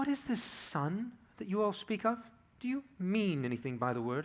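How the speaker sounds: gentle, soft, high wood-pigeon cooing. The witch speaks up, cooing softly like a wood-pigeon. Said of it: "cooing softly like the voice of a wood-pigeon".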